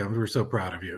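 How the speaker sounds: put-on sarcastic tone. Retelling what a parent said after the game: imitating a sarcastic remark. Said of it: "something sarcastically like".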